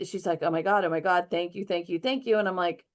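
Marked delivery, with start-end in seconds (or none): 0.4-2.4 put-on freaked-out, panicked gasping for air. Telling a story about her reaction, imitating someone gasping for air. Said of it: "she was gasping for air. She was so freaked out".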